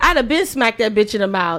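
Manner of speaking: ordinary talk, nothing marked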